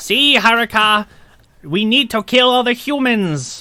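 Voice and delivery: very slow, high put-on voice, each word drawn out. Joining a joke about an evil character: sounding like Dan Aykroyd in Coneheads. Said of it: "you sound more like Dan Aykroyd from Coneheads".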